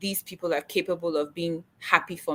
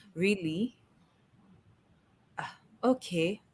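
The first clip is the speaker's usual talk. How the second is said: underwhelmed, lukewarm, unenthusiastic tone; 7 dB quieter than usual. Retelling someone's response to news of a new job: imitating an unenthusiastic reply. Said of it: "I'm giving you the exact tone that I got".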